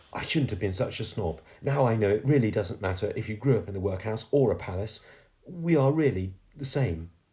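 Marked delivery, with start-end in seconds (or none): none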